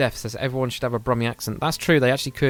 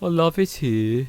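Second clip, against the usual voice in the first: put-on Brummie accent with a sad, mournful tone; 4 semitones higher than usual. Explaining how a brummie accent sounds, then demonstrating it: sad-sounding brummie accent. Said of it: "a Brummie accent is it always sounds like they're really sad".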